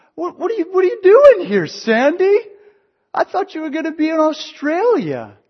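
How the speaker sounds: very high, loud, squeaky babble.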